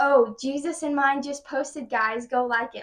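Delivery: loud, put-on sarcastic jeering voice. Retelling a classmate's remark in class: imitating a loud sarcastic classmate. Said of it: "really loudly".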